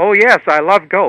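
mock very loud, high, perked-up enthusiasm. Retelling a golf fan's answer when asked about golf; imitating someone perking up. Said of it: "But he perks up".

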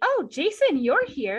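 mock thrilled, eager, high and loud excited voice. Retelling a character walking in and greeting Jason: imitating excited greeting. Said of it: "she seems very excited to see him".

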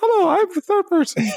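very high-pitched, squeaky cartoon-mouse put-on voice. Doing the voice of the third person, high-pitched put-on voice. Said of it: "Third person is always high pitched".

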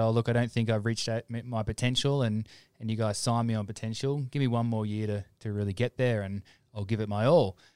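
ordinary delivery

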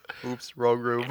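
mock casual, unbothered, nonchalant deadpan delivery. Repeating another player's in-character line: imitating a nonchalant line. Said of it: "how nonchalantly he says that".

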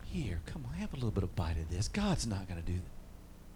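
smooth serpent-like coaxing, very low, very quiet, slithering. Acting out how the tempter deceived Adam and Eve, smooth slithering tempter voice. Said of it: "you can hear it in the smoothness of his voice slithering".

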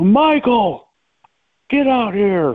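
booming call, high pitched and drawn out slowly. Speaker retells the coach calling Michael out of the house, Coach Kramer's big booming voice. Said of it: "just in his big booming voice".

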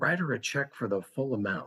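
whispered voice. Retelling a quiet aside to his wife about a check: retelling a whisper. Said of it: "I whispered to my wife".

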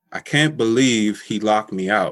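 ordinary delivery

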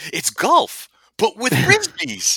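put-on voice, pitched high, loud and booming. Talking about Churchville Park in a Tony Paquetta kind of tone: Tony Paquetta voice. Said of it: "with a Tony Paquetta kind of toner".

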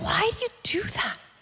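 unvoiced, soft, exasperated whisper.

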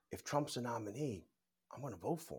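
secretive, very quiet half-whisper, barely breathed under breath. Retelling what people at a meeting said: imitating a half-whisper. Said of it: "under their breath whispering".

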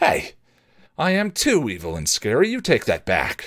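insistent, offended, indignant, swooping pitch. A vampire objects after being told he isn't evil or scary, demanding. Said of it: "he demanded".

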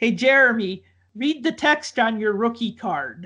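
put-on speaking with a French Canadian accent. Retelling what a coach said to a player at a card signing, French Canadian accent. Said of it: "In his French Canadian accent".

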